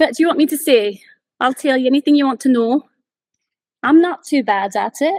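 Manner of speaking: refined, posh put-on Edinburgh Scottish accent. Answering a request to try a Scottish accent: put-on Scottish accent. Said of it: "Can you guys put a Scottish accent on?".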